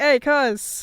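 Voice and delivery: put-on loud, belted Boston accent. Picturing a game character aloud: Red with a Boston accent. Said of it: "I always pictured Red with a Boston accent".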